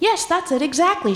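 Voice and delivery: cheerful, oblivious, high, happy chirp. She answers the narrator's unspoken thought aloud, chirpy, happy, oblivious. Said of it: "she chirped, happy, oblivious".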